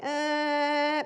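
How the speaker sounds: high, loud mock alarm-like buzzer blare. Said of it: "it's going".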